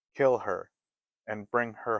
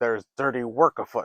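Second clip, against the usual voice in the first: grumbling dwarf voice, louder; 2 semitones higher, 5 dB louder than usual. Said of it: "grumbled the dwarf called Grumpy".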